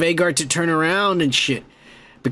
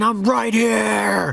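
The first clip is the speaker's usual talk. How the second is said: mock gritty, rough, creaky cry, drawn out; 5 semitones higher than usual. Retelling a scene where a man screams at the dragon, retelling a scream. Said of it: "he screams at the dragon".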